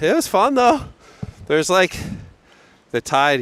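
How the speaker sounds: winded, huffing and puffing. Speaker chats about surfing with the other speaker, huffing and puffing. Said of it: "I'm huffing and puffing".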